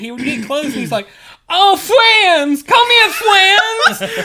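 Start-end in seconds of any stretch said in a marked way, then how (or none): 1.5-4.3 put-on childlike killer voice, higher and louder. Retelling a game where a player ran around as Jason: imitating a player's Jason voice. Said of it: "this dude was running around as Jason".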